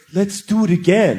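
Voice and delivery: play-acted, slow, eerie, lingering, creepy voice. Retelling a partner's request after sex: imitating a creepy tone. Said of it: "creepy like that".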